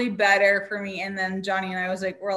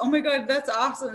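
mock-excited voice, pitched higher; 5 semitones higher than usual. Retelling a woman's reaction to the speaker figuring something out, imitating her excitement. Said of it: "she was all excited that I was able to figure it out".

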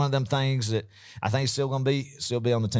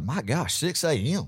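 normal talking voice

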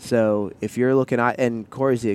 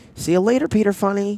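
put-on little girl voice, pitch way up, very high; 11 semitones higher, 4 dB louder than usual. Quoting a little girl from a children's show: Snowy Day little girl voice. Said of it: "you got the inflection down pretty well".

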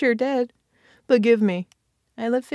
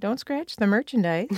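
ordinary delivery

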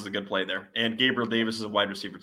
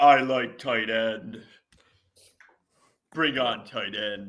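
put-on caveman voice. Joking about a football lineup, the speaker voices Taylor Heinicke as a caveman. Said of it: "you made him sound like a caveman".

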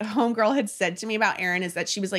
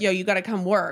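ordinary talk

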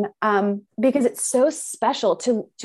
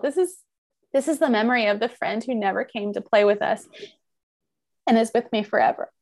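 choked up, fighting back tears mid-sentence. Reading about Marshmallow and her box, getting emotional. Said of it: "I'm gonna get emotional".

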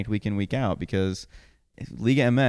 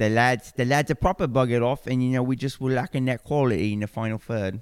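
mock English accent, pitched higher. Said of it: "read it in a Gary Smith accent".

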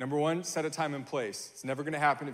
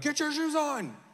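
put-on, very high-pitched, loud yell; 13 semitones higher than usual. A parent recounts yelling at their kids in parent mode, retelling yelling at kids. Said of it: "I'm like yelling at them".

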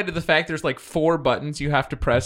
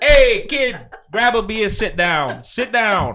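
put-on Brooklyn accent; 4 semitones higher, 3 dB louder than usual. Riffing on a terrible movie, a speaker plays a scene in a Brooklyn accent. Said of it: "It's better when you add the Brooklyn accent".

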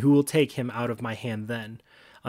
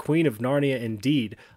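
ordinary talk

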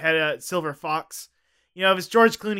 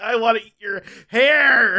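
put-on yell, higher and louder; 5 semitones higher, 5 dB louder than usual. Retelling an actor's line on set: imitating someone yelling. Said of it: "he was yelling at the end of it".

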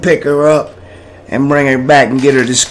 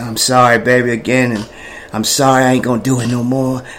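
put-on scared, nervous voice, much lower pitch; 3 semitones lower, 4 dB quieter than usual. Recounting apologizing again to someone, retelling a scared, nervous apology. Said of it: "I'm scared and I'm nervous and I say".

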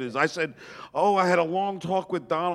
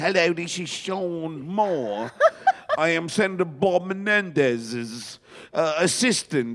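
clumsy, bad, put-on English accent; 2 semitones higher than usual. Retelling posing as a senator's assistant on the phone, bad english accent. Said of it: "I had this bad English accent".

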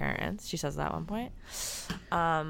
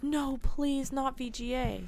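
mock, high, very slow, drawn-out begging; 8 semitones higher than usual. The speaker retells what a girl said when her request was refused, mock-begging. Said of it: "she begs to go to military school".

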